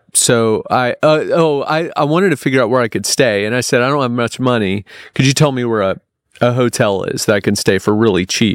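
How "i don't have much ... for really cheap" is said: usual speaking voice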